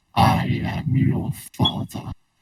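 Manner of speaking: very slow, drawn-out, rough and creaky voice. Saying the line after another speaker asks for the Vader voice: Darth Vader voice. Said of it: "You should do the Vader voice".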